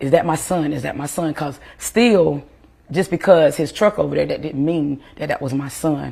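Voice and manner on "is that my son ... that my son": ordinary delivery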